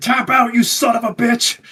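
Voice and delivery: very high, shrill, loud screaming. Retelling a wrestling match moment, imitating Kurt Angle screaming. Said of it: "He starts screaming".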